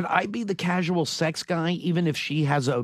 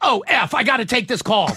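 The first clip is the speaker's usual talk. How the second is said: sudden, loud, high-pitched yelling outburst; 5 semitones higher, 6 dB louder than usual. Retelling how Bennett ended a phone call: imitating Bennett yelling. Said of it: "and he yells".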